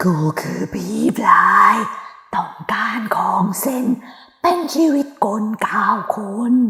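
put-on dry, hoarse, raspy old man's voice. Narrator voices a spirit speaking through a medium, hoarse, dry old man's voice. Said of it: "เสียงแหบแห้ง...เป็นเสียงของชายแก่".

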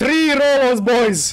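excited screaming. A streamer reacting to enemies summoned by a game mod, screaming excitedly. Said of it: "Sorry, I'm screaming, but I'm just so excited".

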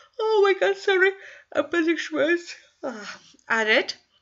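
speaking mid-yawn. Explaining work on a sketch, the speaker talks while yawning. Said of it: "Sorry for yawning".

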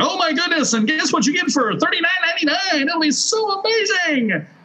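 very high, squealing, over-the-top infomercial pitchman gush. Demonstrating a sales pitch style people no longer respond to, overblown hype. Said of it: "that kind of overblown emotionalism".

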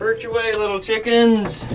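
cooing sounds.

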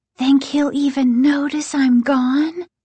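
high-pitched, loud stage whisper. Mrs. Brewer turns back to the kids and asks them, in a loud whisper. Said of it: "she asked in a loud whisper".

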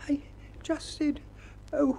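very high-pitched, jittery, nervous squeak. Piglet answers Eeyore's question about what he said, nervously. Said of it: "said Piglet nervously".

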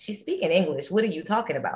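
mocking, dismissive, heavily sarcastic tone. Retelling a reply to a friend who can't follow the professor: retelling a sarcastic remark. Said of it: "I said to him in a sarcastic way".

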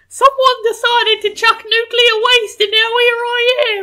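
put-on very loud, very high, shouted British accent. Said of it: "I was thinking more Tom Holland British".

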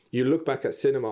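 normal talking voice

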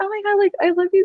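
nervous, very high-pitched gushing. Retelling walking up to him to ask for a photo, acting out her high nervous voice. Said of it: "I do like the high voice when I get nervous".

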